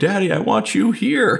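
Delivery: put-on crying little girl, very high, tearful, pleading. Retelling a young daughter's plea during a video chat: imitating a crying child. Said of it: "So she's crying".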